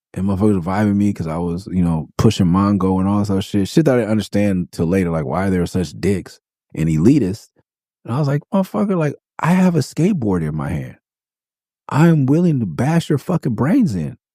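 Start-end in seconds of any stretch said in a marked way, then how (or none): 8.5-14.1 mock raging, hot-tempered, swooping and pitched up. Retelling own threat to skaters who were being elitist: retelling own angry threat. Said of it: "my anger management was all off".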